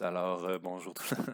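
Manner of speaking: soft, hushed, put-on gentle ASMR murmur. Joking that sleepy students can use the video as ASMR: put-on soft ASMR voice. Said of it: "une voix douce".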